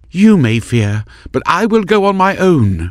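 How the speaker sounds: quavering, very high-pitched trembling voice. Narrator voicing Maris speaking to Heron, trembling voice. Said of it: "her voice trembling".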